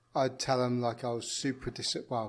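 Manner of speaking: ordinary delivery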